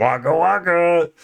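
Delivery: put-on, knowingly fake comedic bear voice. Claiming to be a fake Fozzie Bear: Fozzie Bear voice. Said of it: "I'm the fake Fozzie".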